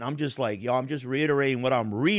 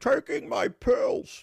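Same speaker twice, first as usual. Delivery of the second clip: rough, raspy, creaky put-on voice; 11 semitones higher than usual. Retelling answering Marco about taking pills: Bane voice. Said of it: "I'm just doing the voice of Bane".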